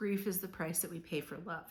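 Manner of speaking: ordinary delivery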